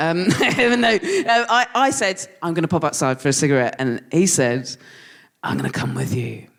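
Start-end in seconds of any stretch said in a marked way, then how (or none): 5.4-6.4 very deep, low, rough, creaky manly voice. Retelling a friend offering to come outside for a cigarette, in a that's-what-a-man-sounds-like voice. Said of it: "that's what a man sounds like voice".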